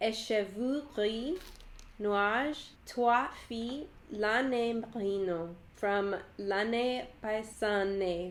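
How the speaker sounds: attempted French accent. Reading out French yarn names, giving an attempted French accent. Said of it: "me being cold and nasally will help my French accent".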